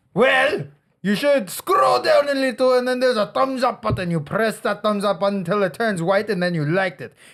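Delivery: put-on German accent.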